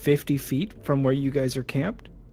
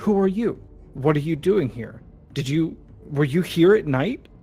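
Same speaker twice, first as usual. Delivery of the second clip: loud, trembling, shaky, frightened voice; 3 semitones higher, 5 dB louder than usual. Hiding behind a tree, a woman questions a stranger in a shaky voice. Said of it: "asks in a shaky voice".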